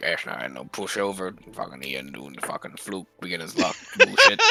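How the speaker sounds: muttering under his breath. Voicing a character grumbling that ian beat him: muttering under his breath. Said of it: "muttering under his breath".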